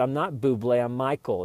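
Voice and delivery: ordinary talk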